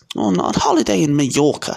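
curt, sharp, high snapped delivery. An aunt answers a question about where her friend is: snapped. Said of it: "snapped Aunt Petunia".

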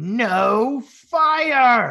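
very high, loud screech with "no" stretched out. A game master voices a female character after a player is thrown, screeching. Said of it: "And she screeches".

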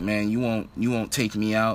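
plain

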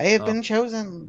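high toy alien character voice. Trading Toy Story quotes with others, doing the Toy Story alien voice. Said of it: "Please stop doing that voice correctly".

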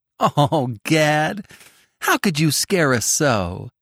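spoken through a laugh, drawn out. Still held in one shaggy arm, Tilly speaks to Gad: laughing. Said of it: "laughed Tilly".

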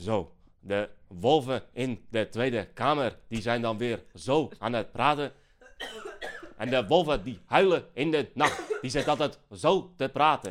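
bad, clumsy, unconvincing put-on Limburg accent. Describing a Geert Wilders campaign ad, the speaker does a bad Geert Wilders accent impression. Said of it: "hoe slecht jij met een accent".

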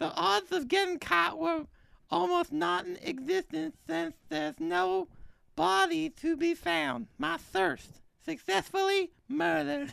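put-on high lisping voice. Reading an ad script in a randomly drawn voice: Mike Tyson voice. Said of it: "Mike Tyson".

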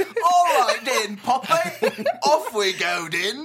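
put-on very high, very loud, very slow wild Cockney accent. Imagining a masked figure suddenly speaking up, in a crazy Cockney accent. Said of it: "really crazy, out of place Cockney accent".

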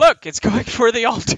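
high-pitched, loud, alarmed shout.

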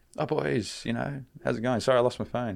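put-on easygoing, offhand delivery. Retelling how a friend greeted them after losing his phone: imitating someone being casual. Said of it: "and he's just so casual".

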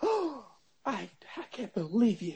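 high, drawn-out, horrified, gasping shocked disbelief. Imagining guests at a meatless party reacting: imitating a shocked gasp. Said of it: "You'll hear a deep gasp".

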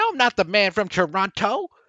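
high, loud voice with wide swooping pitch. Acting out a movie line about the Man from Toronto: Kevin Hart impression. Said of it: "That's my Kevin Hart impression".

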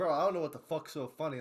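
ordinary talk

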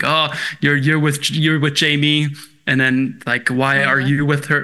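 ordinary talk

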